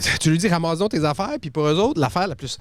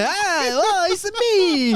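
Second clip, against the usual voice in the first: cliché put-on Italian accent, very high, very slow; 13 semitones higher than usual. Voicing a walking spaghetti as imagined: put-on italian accent. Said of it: "je l'ai entendu parler avec un accent italien".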